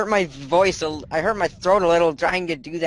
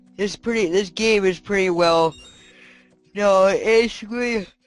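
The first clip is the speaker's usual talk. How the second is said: yawning while talking, higher; 4 semitones higher than usual. Chatting about a well-known game, yawning while talking. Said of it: "sorry, I'm yawning a lot".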